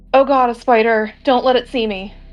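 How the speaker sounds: mild half-yell, a small alarmed cry. Playing a character who walks in and sees a spider, somewhat loud yell. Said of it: "in a louder voice than my normal voice".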